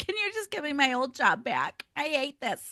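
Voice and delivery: high, tearful, pleading voice, sobbing hard. Retelling begging the hr office for the old job back: imitating own past crying. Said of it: "crying my eyes out".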